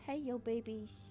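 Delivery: quiet cooing voice. Slipping by accident into the voice used for talking to dogs; dog voice, like baby talk. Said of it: "Accidentally announces my uh, my dog voice".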